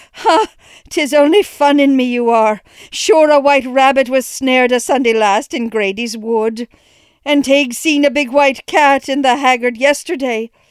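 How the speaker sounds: laughing it off. Narrating a pale mother trying to rally herself, forced laugh to rally. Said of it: "trying to rally with a laugh".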